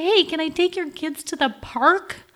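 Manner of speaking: helpful-sounding voice, high and slow. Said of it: "ring the doorbell and say".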